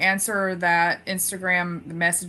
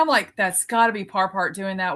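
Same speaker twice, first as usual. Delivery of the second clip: ordinary talk, nothing marked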